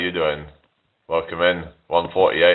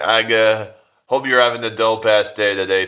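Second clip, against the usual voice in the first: put-on American accent; 4 semitones higher than usual. Greeting people watching live, showing she can do an American accent. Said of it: "I can do an American accent".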